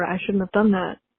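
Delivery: ordinary delivery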